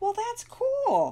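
upbeat, hopeful, optimistic lilt, very high pitched. Narrating Pearson replying to Penelope's apology while stacking blocks: optimistic. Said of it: "Pearson said optimistically".

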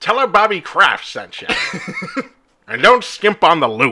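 put-on high, loud, swooping old-fashioned old-timey voice. Riffing with another speaker, launching into a bit in an old-timey voice. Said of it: "and also old-timey voice".

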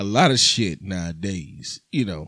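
playboy voice with pitch dropped very low. Speaker, nicknamed Playboy by another speaker, starts his answer in Playboy voice. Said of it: "I had to go into my Playboy voice".

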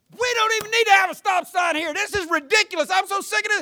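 very high, shrill, loud yelling. Speaker reenacting own words at a stop sign, sister sitting there: retelling a yell. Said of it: "And then I'm yelling".

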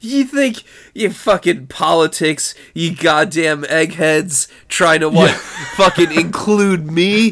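put-on furious, offended, angry rant. Retelling how an angry man rants at a pollster: imitating an angry rant. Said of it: "goes on this fucking rant".

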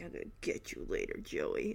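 mock sneering, menacing whisper. Retelling how a contestant sneered at another: imitating a sneer. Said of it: "he is literally sneering in Joey's direction".

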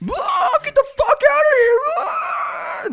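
acted very high, very slow, drawn-out shriek. Recounting a prank on a man in the shower, acting out his reaction: retelling a scream. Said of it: "Just screaming".

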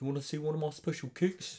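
put-on Australian or New Zealand accent. Retelling a movie character's line: imitating an australian or new zealand accent. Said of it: "an Australian and, or New Zealand accent".

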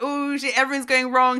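loud, high-pitched, blurted-out exclamation. Retelling what Snoochie does on her radio show: imitating Snoochie Shy. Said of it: "And she'll be like".

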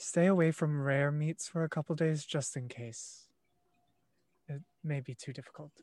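very quiet half-whisper. Sidling up to another character while the others say thanks: very quiet half-whisper. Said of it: "whisper in Elvish very quietly".

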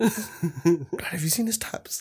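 soft, hushed whisper under the breath. Retelling how a cousin came out of a bathroom: imitating someone whispering. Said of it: "he's whispered to me".

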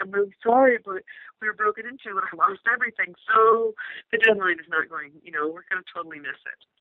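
tearful, crying voice. Recounting a call to the publisher after a break-in, retelling their own crying. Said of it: "I think I was crying".

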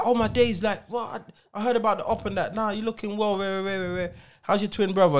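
buddy-buddy, warm tone. Acting out an old friend greeting someone in a shop: imitating an old friend's greeting. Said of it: "And he's like".

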